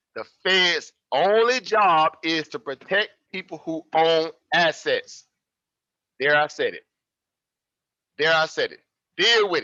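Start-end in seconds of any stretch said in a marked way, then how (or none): 0.2-5.3 very slow, deliberate, clear, carefully spaced words. Speaker repeats a point so listeners can't miss it: very slow and clear. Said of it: "let me say this very slow and clear".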